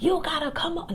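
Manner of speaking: high, charging motivational speaker voice, preacher-like.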